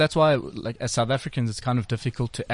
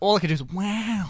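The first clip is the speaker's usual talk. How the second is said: put-on laid-back actor voice, higher; 8 semitones higher than usual. Answering a request to do an Owen Wilson impression. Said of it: "can you do Owen Wilson?".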